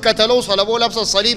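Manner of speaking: ordinary delivery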